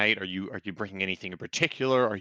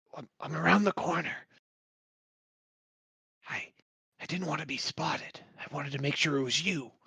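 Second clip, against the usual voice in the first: high, halting, stumbling half-whisper; 5 semitones higher, 4 dB quieter than usual. Voicing a figure hiding around the corner: half-whisper. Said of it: "Why are you whispering?".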